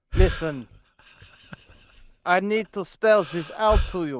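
put-on Russian accent, authoritative. Addressing the other speaker mid-conversation, using a fake russian accent. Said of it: "Why are you a Russian?".

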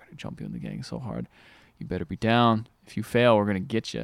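mock grave, dark, serious, menacing delivery. Retelling a scene where a little kid threatens someone, in a mock dark, serious threat. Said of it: "it's like really dark and serious".

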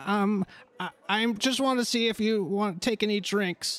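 nervous, uneasy, anxious halfling voice. Game master voicing a halfling who recognizes the party, nervous halfling voice. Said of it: "this halfling he he's nervous".

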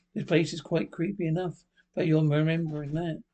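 ordinary delivery

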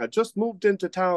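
bad put-on Nigerian accent. Quoting a customer from Nigeria who comes in for oxtail: bad Nigerian accent. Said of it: "that was probably the worst Nigerian voice of all time".

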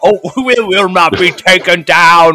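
put-on villain voice, screaming. Retelling a scene with Tashi, imitating Mumm-Ra screaming. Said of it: "So he's screaming at".

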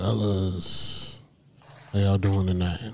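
low-pitched, soft, seductive voice. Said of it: "Why you sound so seductive?".

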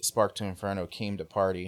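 ordinary delivery

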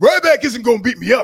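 booming put-on voice at full volume. Quoting what Booker T said on his cast about Ryback, Booker T voice. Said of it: "I'll do it in my Booker T voice".

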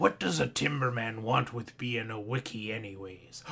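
deep, low, dropped movie-character voice. Doing an announced impression from The Lighthouse: Willem Dafoe impersonation. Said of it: "my Willem Dafoe impersonation from that movie".

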